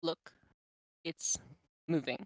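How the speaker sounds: hushed, breathy, very quiet whisper. Voicing a character who points at the floor: whispering. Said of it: "very quiet as she whispers".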